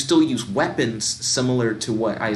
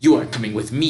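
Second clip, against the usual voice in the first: snarling, menacing vampire voice; 4 dB louder than usual. Reading a story aloud, the vampire grabs you and snarls this line. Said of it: "he snarls".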